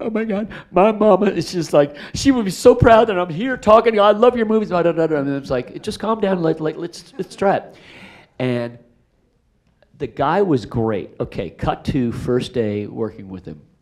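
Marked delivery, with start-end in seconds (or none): 0.0-4.7 very high, rushed, gushing crying sobs. Retelling how a man at a casting broke down before Jerry Bruckheimer, imitating someone crying. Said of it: "he starts crying".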